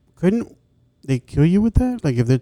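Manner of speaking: very loud, high shout through a mouthful. A speaker cuts into the discussion to ask a question, talking with mouth full. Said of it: "I have a bunch of food in my mouth".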